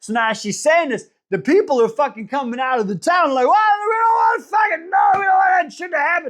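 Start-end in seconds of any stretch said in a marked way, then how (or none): 3.5-6.3 high, screaming crowd yelling back in chorus. Retelling the townspeople's reply, imitating them screaming. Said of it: "And they're fucking screaming".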